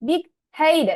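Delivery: "headed" with stress on first syllable "head". Teaching compound adjective stress, the speaker says big headed stressing the first syllable of headed. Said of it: "second ওয়ার্ডের first syllable".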